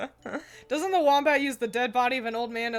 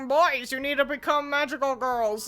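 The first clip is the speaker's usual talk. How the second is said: put-on old man voice; 2 semitones higher than usual. Quoting a show's mascot addressing the boys: old man voice. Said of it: "He's also got an old man voice".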